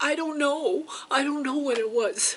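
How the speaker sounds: high, loud scared voice. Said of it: "And I said".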